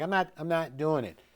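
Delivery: normal talking voice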